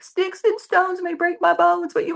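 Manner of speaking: put-on tearful voice. Retelling saying a childhood rhyme while crying: imitating own past crying. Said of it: "but I'm crying".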